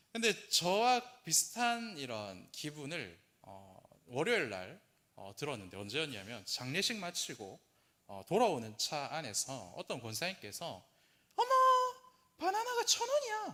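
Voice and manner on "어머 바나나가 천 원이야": mock delighted, excited surprise, higher and louder. Retelling what an elder said in the car: imitating excited surprise. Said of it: "노트북을 사서 그 언박싱 했을 때 그 톤으로".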